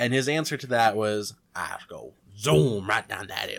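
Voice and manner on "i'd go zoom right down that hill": put-on faint Cajun accent, not natural. Retelling his answer to a question, in a borderline Cajun accent. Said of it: "With like a borderline Cajun accent too".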